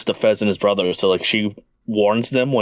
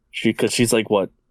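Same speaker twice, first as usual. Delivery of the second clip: ordinary talk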